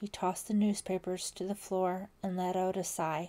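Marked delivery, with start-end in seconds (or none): none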